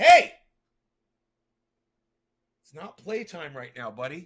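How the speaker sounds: loud, scolding yell. Speaker breaks off to stop a dog: yelling at a dog. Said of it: "I'm so sorry I got to yell at this dog".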